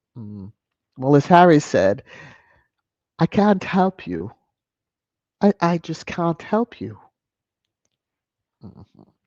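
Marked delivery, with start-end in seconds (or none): 3.2-6.8 bad put-on English accent, higher. Quoting Harry's words from a chat, failed English accent. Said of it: "I'm trying with the English accent".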